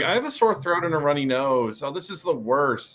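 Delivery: ordinary talk, nothing marked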